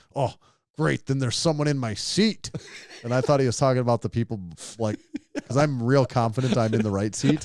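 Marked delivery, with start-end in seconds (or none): 0.1-2.5 put-on loud mumbling under the breath. Retelling what a man said on reaching his plane seat, imitating a loud under-breath mumble. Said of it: "he mumbles like semi under his breath, but also very loudly".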